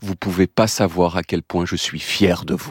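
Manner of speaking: mock-solemn tone. Retelling what a man told the whole sport class at the end: retelling a solemn remark. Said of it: "avec un ton solennel".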